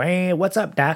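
high cartoon rabbit voice. Retelling a voice actor asked by restaurant fans to do the voice: Bugs Bunny voice. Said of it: "do Bugs".

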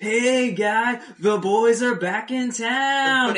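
high, booming, very slow, drawn-out surfer holler. Retelling yelling out a car window at a friend: imitating yelling like a surfer. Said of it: "acting like surfers".

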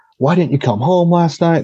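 worried dad voice. Retelling a story, the girls' dads answer their calls: imitating a concerned dad. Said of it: "hear their dad's concern in their voices".

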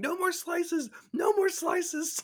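shrill, very high, screaming pleading. Retelling spinning and going down on a ride, imitating Chris screaming. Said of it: "Chris kept screaming".

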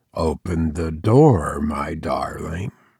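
said very quietly, subdued voice. Reading a story aloud, John asking through the door: very quiet voice. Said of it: "he said very quietly indeed".

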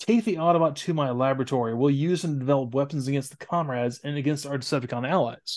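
usual speaking voice

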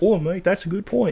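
put-on chummy British accent. Showing how an actor really talks: imitating a british accent. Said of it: "he talks like this".

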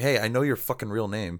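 imitated, confident, self-assured tone. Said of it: "kinda confidently stands up to him".

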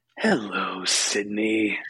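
ominous put-on voice. Recapping the film, asked to do the caller's line: Ghostface voice. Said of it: "do the voice, [name]. ... That was my attempt".

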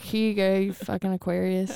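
ordinary delivery

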